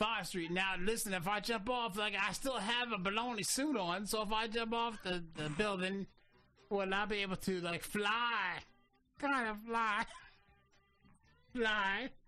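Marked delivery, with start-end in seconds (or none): 4.1-12.1 talking through laughter, word fly drawn out. Caller on the phone with emergency services, laughing while talking. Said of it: "Why are you laughing?".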